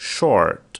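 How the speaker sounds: loud American English "short" with the r clearly sounded.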